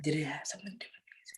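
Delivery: hushed whisper. Guessing which one the other speaker means, whispering. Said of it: "Why are we whispering?".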